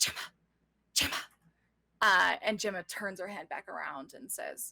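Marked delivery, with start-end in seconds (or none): 0.0-1.1 voice dropped right down. Retelling how she called to a woman while someone else stood near, in a lowered voice. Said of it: "lowers her voice and goes".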